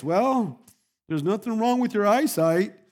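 pensive, measured, thoughtful, considered delivery. Telling a joke, the husband answers his wife: soft, thoughtful voice. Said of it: "says a soft, thoughtful voice".

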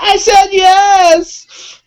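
very high, loud, called-out shout. Retelling how someone shouted on a riverbank: imitating Audrey shouting. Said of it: "shouting on the banks of the river saying".

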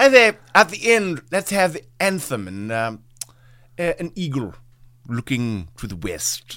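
put-on British accent. Joking about a film as its director: Alfred Hitchcock voice. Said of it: "He talks like that in my mind".

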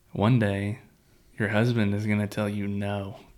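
ordinary talk, nothing marked

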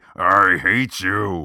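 big, manly voice. Speaker shows Hayden how John Wayne would say the line: manly John Wayne delivery. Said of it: "give us kind of like the more manly".

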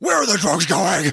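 menacing, intimidating superhero voice. Recapping a Batman movie scene, the speaker quotes Batman questioning Flash: Batman voice. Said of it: "you're going to have a lot of Batman voice".

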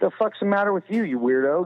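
play-acted rude jab. Retelling waking in hospital and snapping at a happy brother: imitating own rude retort. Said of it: "just in true prick fashion".

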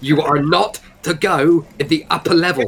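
hushed stage whisper. Describing a character who leans in and grabs someone's face; stage whisper. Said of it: "and in a stage whisper".

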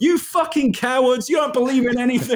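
shrill, very high, screamed scornful tone. Retelling yelling at guys doing the tomahawk chop once they stop: retelling screaming at them. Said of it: "I go".

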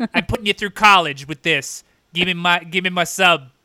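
demanding, ancient monster voice. Playing a monster demanding more sauce on a sub: Cthulhu voice. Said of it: "that's Cthulhu for you folks".

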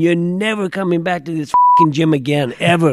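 loud, screaming, ranting tirade. Retelling a man running out as the referees leave, imitating someone screaming. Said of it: "he's screaming".

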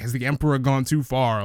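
ordinary delivery

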